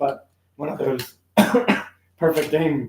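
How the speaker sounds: slowed, voice catching and slipping after a cough. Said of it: "Sorry, my voice just changed".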